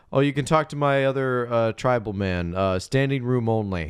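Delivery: plain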